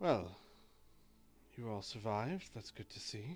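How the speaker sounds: very surprised, astonished tone. Voicing Marcus the Drow greeting the survivors: very surprised. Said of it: "he sounds very surprised".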